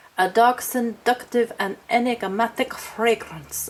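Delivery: put-on vampire voice. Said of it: "I don't know why it needs an accent".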